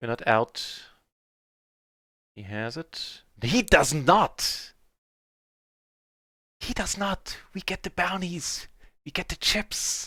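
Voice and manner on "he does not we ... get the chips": high, whispered play-by-play stage whisper. Commentating on a card hand as it plays out, whispering. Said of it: "I don't know why I'm whispering".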